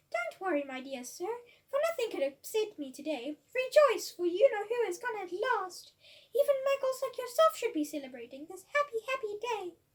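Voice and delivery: put-on squeaky, piping, high, loud old man voice. Reading a story, an old man speaks to Mister Dursley: squeaky voice. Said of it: "he said in a squeaky voice".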